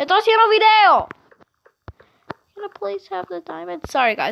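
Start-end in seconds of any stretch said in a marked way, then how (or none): 0.0-1.1 very high, shrill, loud yell. Video maker interrupted by his dad, yelling at his dad. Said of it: "I'm sorry for yelling".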